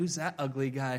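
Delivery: playful, teasing delivery. Retelling poking his wife as his dad's picture came up, retelling a joking remark. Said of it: "I jokingly said".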